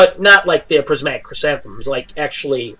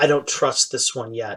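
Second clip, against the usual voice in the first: secretive, soft half-whispered aside; 2 semitones lower, 7 dB quieter than usual. Game narrator voicing a character leaning in to a player's ear, half-whispering. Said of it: "kind of whispers over in your ear".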